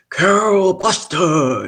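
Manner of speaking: high-pitched call, projected as if across a room. Retelling how a man called out her name from across the room: imitating Barry's booming voice. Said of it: "this man with this booming voice".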